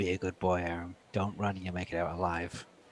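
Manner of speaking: very low, hushed, menacing half-whisper. Walking aaron toward the house with an arm around him, half-whispered in his ear. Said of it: "I want to whisper in his ear".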